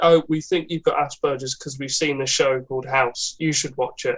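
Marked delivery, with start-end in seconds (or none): none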